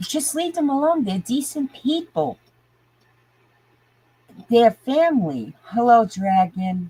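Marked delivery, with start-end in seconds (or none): 0.0-5.5 agitated, getting heated, pitched high. Defending a family against people picking on them: getting worked up. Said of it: "Now I know I'm getting worked up".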